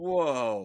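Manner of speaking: whoa low, drawn-out, sarcastic. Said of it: "That's sarcasm".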